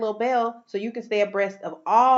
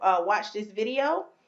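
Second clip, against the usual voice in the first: ordinary talk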